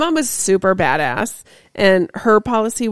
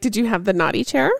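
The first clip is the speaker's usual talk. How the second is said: ordinary talk, nothing marked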